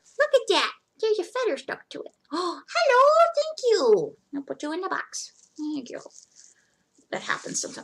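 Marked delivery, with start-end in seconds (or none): 0.2-6.0 voice jumping way up, high, swooping sing-song. Packing items to ship, the speaker greets a feather stuck on one, high-pitched voice. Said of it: "my voice goes so high pitched".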